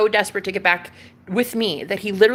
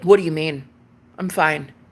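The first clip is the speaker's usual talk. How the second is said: mock indifferent, nonchalant tone, lower; 4 semitones lower than usual. Retelling what he said on a late phone call: imitating a nonchalant tone. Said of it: "he was just so nonchalant".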